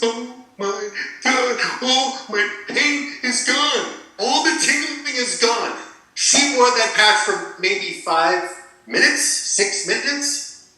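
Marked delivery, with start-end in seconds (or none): 0.0-5.8 high, tearful voice, words pushed out through crying. Retelling his mother's reaction after the patch: imitating someone crying. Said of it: "She cries and she says".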